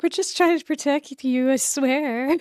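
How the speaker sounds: high, loud, soothing protective voice. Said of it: "The universe is like".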